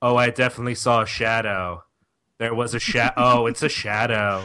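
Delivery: mock, flat, unenthused, bored monotone. Mimicking a man the speaker wanted to act more, in a mock-bored flat delivery. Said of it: "he sounds bored by his own revelations".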